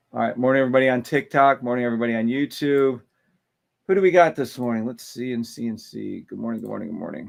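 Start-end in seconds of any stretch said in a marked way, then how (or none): 6.3-7.3 tired voice, quieter and lower. Greeting viewers one by one on a morning TikTok and YouTube stream, tired voice. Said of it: "Sorry if I sound tired".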